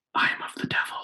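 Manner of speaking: hushed, breathy whisper, barely voiced. Retelling words said aloud while half asleep one night: imitating own past whisper. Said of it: "I whispered out loud while I was asleep".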